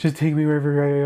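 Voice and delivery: ordinary talk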